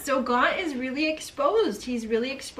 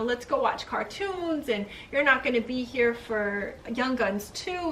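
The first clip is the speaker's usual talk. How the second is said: usual speaking voice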